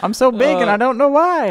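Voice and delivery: very high, loud, squeaky, silly cartoon voice. Joking about a corn with elephantitis: impression of corn with elephantitis. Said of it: "That's my impression of corn with elephantitis".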